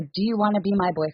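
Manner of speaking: ordinary talk, nothing marked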